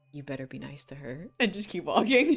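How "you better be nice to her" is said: whispering. Walking past a character at a party in character: whisper. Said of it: "I'm just gonna whisper".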